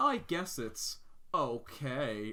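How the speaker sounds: mock very slow, self-satisfied, drawn-out sing-song drawl. Complaining about a movie reviewer, quoting his verdict on a popular movie, mimicking a smug remark. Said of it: "he kind of really smugly goes".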